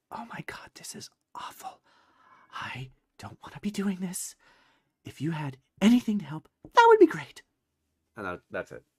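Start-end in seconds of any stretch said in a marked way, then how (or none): 0.1-7.4 stage whisper, pitched up. Voicing a character who answers a sent message: whispering. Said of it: "you hear Zelina whisper back".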